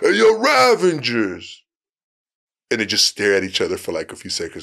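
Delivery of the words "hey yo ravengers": high, rough taunting voice with wide pitch swings. Retelling the actor mocking Sylvester to his face: mocking Sylvester Stallone impression. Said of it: "he keeps making fun of him".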